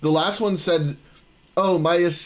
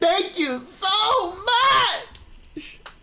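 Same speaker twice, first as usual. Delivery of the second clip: very high, slow, drawn-out gushing. Showing how to thank viewers for follows: energetic thank-you. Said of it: "You gotta be more energetic".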